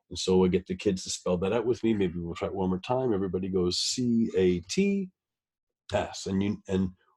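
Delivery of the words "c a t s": very slow spelling, pause after T, before S. Spelling out CATS with kids to mark a plus sign: pause after T before S. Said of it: "notice how I paused after the T where that plus sign is".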